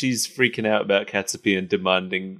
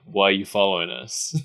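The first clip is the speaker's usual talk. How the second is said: ordinary talk, nothing marked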